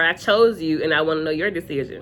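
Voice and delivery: ordinary talk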